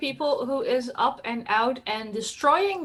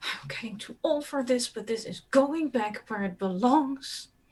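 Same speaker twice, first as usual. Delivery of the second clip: muttering under breath, much quieter; 4 dB quieter than usual. Narrator voicing Ursula dragging things between temples, Ursula muttering under breath. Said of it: "muttering under her breath".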